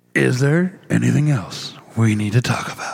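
put-on movie trailer announcer voice. Asked by the other speaker to redo the line, in a movie trailer guy voice. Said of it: "Now do it as the movie uh, trailer guy".

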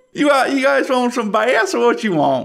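put-on fish shack owner accent. Voicing Billy, the fish shack owner, greeting customers: different accent from locals. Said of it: "quite the different accent from everyone else".

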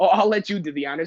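mock smug attitude. Retelling what a salesperson said while setting up a phone: imitating a smug attitude. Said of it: "a smug attitude".

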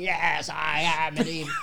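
slow, put-on possessed voice. Retelling a comedy bit, pretending to be possessed: put-on possessed voice. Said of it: "I pretend I'm possessed, and I start putting on voices".

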